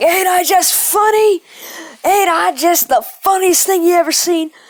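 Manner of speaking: high, loud, full maniac killer-clown yelling. Retelling what was yelled as a killer clown in a haunted house: imitating own yelling as a killer clown. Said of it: "I started yelling".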